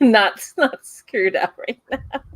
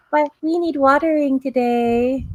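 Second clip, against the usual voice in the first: tiny, pitched-up walking bush-robot voice; 6 semitones higher than usual. Describing small robots decorated with plants, the speaker voices them: little robot bush voice. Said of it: "In that kind of voice".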